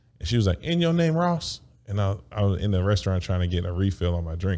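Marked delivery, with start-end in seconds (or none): 0.6-1.6 put-on Tennessee accent, very high, "ice" said as "oss". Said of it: "But she said ice like Oss".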